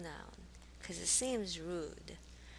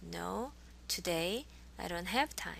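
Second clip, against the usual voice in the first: ordinary delivery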